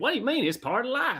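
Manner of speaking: put-on full Southern accent, very high pitch. Retelling a book character's line as the narrator voiced it, in Rufus's Southern voice. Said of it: "I think I nailed it".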